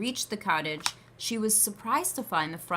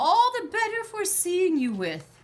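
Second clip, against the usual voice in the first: very high, quavering, wobbly voice; 13 semitones higher, 3 dB louder than usual. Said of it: "the wolf replied in the same wobbly voice".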